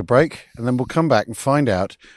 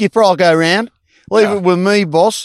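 put-on Australian accent, higher and louder; 8 semitones higher, 7 dB louder than usual. Voicing Mickey Martin, who is Australian, answering the skipper: put-on Australian accent. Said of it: "we're not here to do, um, Australian accents".

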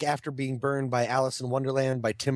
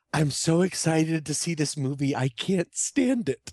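mock gushing, thrilled, excited little girl voice; 3 semitones higher than usual. Retelling what a little girl said as a movie started: imitating an excited little girl. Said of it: "a little girl behind me".

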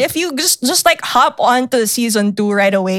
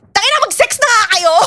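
mock shrill, piercing, very high shrieking scream; 13 semitones higher than usual. Retelling what a classmate screamed in a silent class during a movie, re-enacted scream. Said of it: "just screamed".

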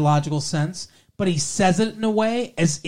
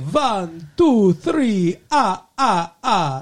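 put-on Transylvanian vampire accent; 3 semitones higher than usual. Speaker compares the voices of two characters, the Count impression. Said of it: "The Count's like".

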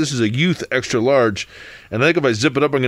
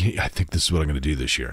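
hushed, secretive, kind of whispering half-whisper; 10 semitones lower, 6 dB quieter than usual. Retelling how kids shared Halloween costume plans: imitating a whisper. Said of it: "you would kinda whispering".

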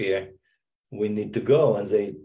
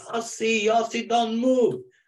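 play-acted, very high-pitched scream; 13 semitones higher than usual. Retelling what Kevin screamed at him as the boat came in: retelling Kevin's scream. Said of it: "And it's Kevin screaming".

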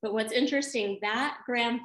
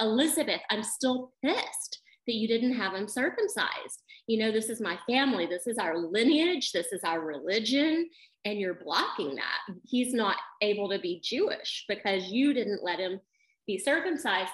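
ordinary delivery

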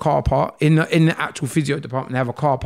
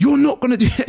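mock shouting, shrill and raised; 11 semitones higher, 4 dB louder than usual. Retelling a physio session where a woman refuses to let him leave: imitating someone shouting. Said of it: "She's shouting".

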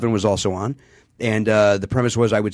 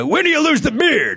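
badly done put-on voice, squeezed very high. Asking a guest a question as an interviewer: horrible Larry King impression. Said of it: "my horrible Larry King impression".

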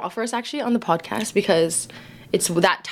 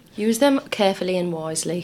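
put-on British accent. Addressing viewers, the speaker slips into a british accent. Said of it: "I went just British there".

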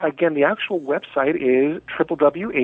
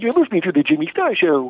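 goofy cartoon moose voice, swooping pitch around; 6 semitones higher than usual. Asked to perform, speaker chooses Bullwinkle instead of a Scottish accent: Bullwinkle voice. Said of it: "do Bullwinkle".

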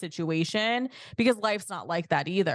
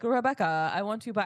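poorly done put-on Nigerian accent; 3 semitones higher than usual. Imitating a TV character who offers to buy a contract: terrible Edwin Akufo accent. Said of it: "I shouldn't even try to do the accent".

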